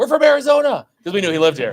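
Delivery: very high, loud shouting. Recalling calling out to a speaker coming off stage, retelling a yell. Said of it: "we just yelled at him like".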